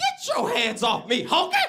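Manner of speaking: very high, loud, sharp snap with wide swooping pitch. Retelling an old blind man's retort: imitating an old blind man's retort.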